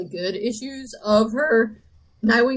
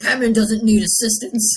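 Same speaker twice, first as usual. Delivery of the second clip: mock grim, gritty dude-bro voice; 4 dB louder than usual. Retelling a comic scene, mocking fans who like it grim: imitating grim gritty dude bros. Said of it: "the voice of the dude bros who like it grim and gritty".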